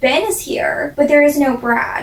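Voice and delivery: ordinary talk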